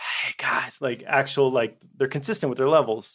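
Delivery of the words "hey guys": soft, breathy whisper pitched to carry. Showing how good actors sound when they whisper: stage whisper. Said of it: "stage whispering".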